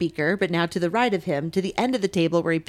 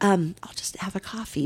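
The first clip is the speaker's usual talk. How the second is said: soft, hushed, barely voiced whisper; 4 dB quieter than usual. Recalling ordering just a coffee, imitating their own whisper. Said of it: "and so I just whispered".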